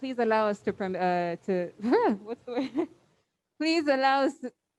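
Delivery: halting, flustered, nervous stumbling false start. Opening a talk to ladies and gentlemen, the speaker is nervous, stumbling. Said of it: "sorry, I'm a bit nervous".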